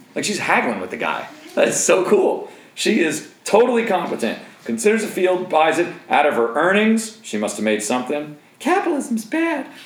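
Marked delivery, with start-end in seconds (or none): 8.6-9.7 very high, mocking put-on parody voice. Speaker comments on a woman buying a field, then does a put-on voice. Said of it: "I love doing the voice".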